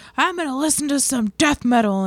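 loud, high-pitched voice. Retelling a neighbor talking to himself outside: imitating someone talking loudly. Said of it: "He's talking to himself really loud".

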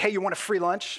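voice with an edgy tone. Retelling how a stranger offered a free lunch: imitating a voice with an edge. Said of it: "a little bit of an edge in his voice".

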